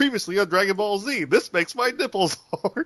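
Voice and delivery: very high-pitched TV announcer show-opener voice. Picturing an announcer introducing an episode: Gary Owens announcer voice. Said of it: "Gary Owens saying".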